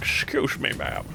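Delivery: very quiet, hushed, breathy put-on character voice. Showing a voice he likes doing, in a put-on voice. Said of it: "I don't know why I like doing this voice".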